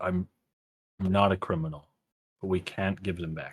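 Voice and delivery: hushed, quiet, close, leaned-in confiding talk. Leaning in close to another character to speak, kind of quietly. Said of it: "kind of quietly be like".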